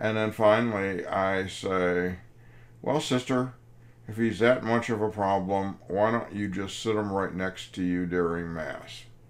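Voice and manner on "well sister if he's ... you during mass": ordinary talk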